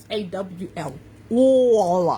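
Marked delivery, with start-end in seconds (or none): 1.3-2.2 all with a stretched New York aw sound. Speaker stressing "all things" lets slip a New York accent on "all". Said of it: "That's my New York accent coming out from the third grade".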